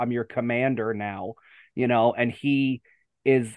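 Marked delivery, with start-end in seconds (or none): 0.0-1.3 put-on very strong, heavily done American accent. Quoting a line from an episode, in a very American accent. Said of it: "I'll say it with the very American accent".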